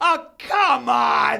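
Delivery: put-on loud yell. Retelling what the woman next to the speaker said, retelling a really loud shout. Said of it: "Like really loud".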